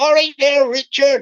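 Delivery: very loud, booming put-on Bristol accent. Imitating a scammer from Bristol greeting Richard, put-on Bristol accent. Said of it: "I'll do the Bristol voice".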